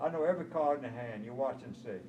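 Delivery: ordinary delivery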